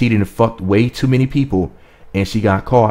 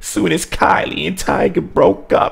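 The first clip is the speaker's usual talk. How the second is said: very high-pitched, slow, drawn-out, creaky put-on voice; 9 semitones higher than usual. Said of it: "let me say it in [name]'s voice".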